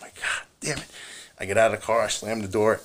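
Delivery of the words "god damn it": acted-out whispered, fed-up, pissed-off swearing. Retelling a fight at end of tour, imitating own pissed-off curse. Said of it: "and I'm pissed off".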